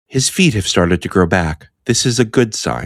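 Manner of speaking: calm, unruffled, unemotional, matter-of-fact delivery. Recounting a funny video where people kept imitating her, monotone delivery. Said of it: "Just everything in like monotone".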